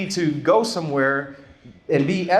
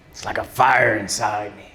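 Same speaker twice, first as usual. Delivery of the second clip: pirate voice with pitch dropped very low; 9 semitones lower than usual. Defining anger while speaking about Cain, sounding like a pirate. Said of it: "I don't know why I sounded like a pirate right there".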